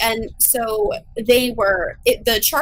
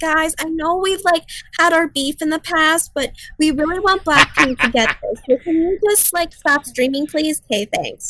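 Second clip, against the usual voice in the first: higher-pitched, casual pleading tone; 5 semitones higher than usual. Imitating fans who ask rivals to stop streaming: imitating a fan asking a favor. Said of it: "Don't come to mom, to Little Moo Moos and say".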